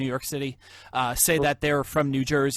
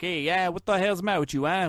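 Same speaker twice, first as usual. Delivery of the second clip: New Jersey accent; 5 semitones higher than usual. Joking that not everyone from New Jersey talks this way: stereotyped New Jersey Goomba accent. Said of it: "not all of us are like the big Goombas".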